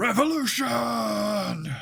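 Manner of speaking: very high, rasping, rough orc battle cry. Narrating a figure who holds a long spear high in a sewer: calling out in Orcish. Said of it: "calls out in orcish".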